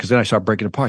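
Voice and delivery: ordinary talk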